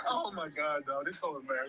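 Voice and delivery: very loud talk, cracking up mid-sentence. Reacting to a video with another speaker, laughing while talking. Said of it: "I shouldn't be laughing like this".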